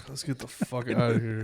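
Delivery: put-on irritated voice. Retelling what they said on set, imitating own irritated self. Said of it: "so irritated".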